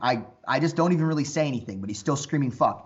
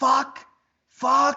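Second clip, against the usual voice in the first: very high, shrill screaming outburst; 12 semitones higher, 3 dB louder than usual. Retelling a man screaming in the speaker's face: imitating someone screaming. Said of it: "he starts screaming in my face".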